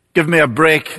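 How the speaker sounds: ordinary talk, nothing marked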